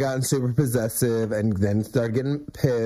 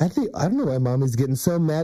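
put-on sing-song baby talk with swooping pitch; 3 semitones higher than usual. Retelling how Lawrence turned to the baby Elijah: Lawrence baby talk. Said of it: "did that baby talk thing".

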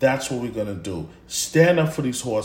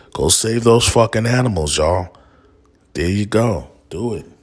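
loud, heavy, super sarcastic delivery; 3 semitones lower, 6 dB louder than usual. Urging listeners out there to act, super sarcastic. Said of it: "I'm being super sarcastic".

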